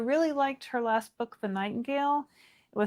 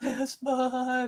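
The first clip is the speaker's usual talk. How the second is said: put-on bawling, crying voice, higher; 3 semitones higher than usual. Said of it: "just bawling".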